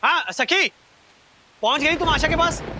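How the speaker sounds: talking too loudly. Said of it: "इतना जोर से क्यों बोल रहे हो?".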